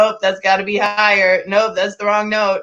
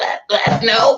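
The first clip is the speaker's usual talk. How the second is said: mock, strangled, choked-sounding voice; 2 semitones higher than usual. Recounting a teacher grabbing the speaker's throat mid-lesson, retelling a choked reply. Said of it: "He grabbed my throat".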